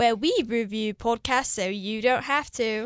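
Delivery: fake, put-on mock British accent. Podcast co-host introducing the weekly show, in a fake British accent. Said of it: "we thought we would surprise you with British accents".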